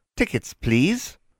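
thin, dry, reedy, high voice. Narrator reads a request for tickets on a train, in a dry, reedy voice. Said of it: "requested a dry, reedy voice".

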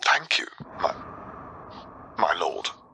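hoarse, croaking near-whisper. A father thanks the shadow he calls his lord: croaking. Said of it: "He croaked out".

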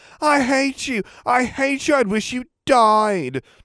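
shrill, nasal, mocking whine, died drawn out. Draco taunts Potter by imitating him in a mocking, nasally whine. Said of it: "Draco said in a mocking, nasally whine".

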